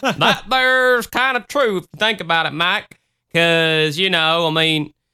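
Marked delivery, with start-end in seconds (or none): 0.0-3.0 put-on Southern accent. Discussing a point about Satan, dropping into a put-on Southern accent. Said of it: "a random Southern accent coming up".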